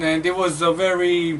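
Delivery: normal talking voice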